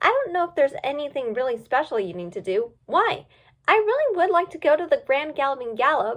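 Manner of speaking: ordinary delivery, nothing marked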